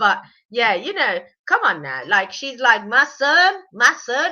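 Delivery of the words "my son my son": very drawn-out, slow, put-on little southern accent. Imitating a woman, doing a little southern accent. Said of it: "I kind of like doing the little southern accent".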